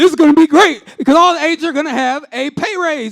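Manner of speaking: high, loud, hyped-up cheer.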